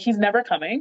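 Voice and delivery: ordinary talk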